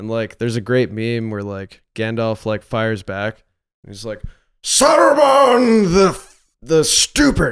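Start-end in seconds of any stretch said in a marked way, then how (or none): 4.6-7.5 very high, booming, drawn-out, slow voice. Retelling a meme where Gandalf fires back: imitating Gandalf. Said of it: "doing that voice".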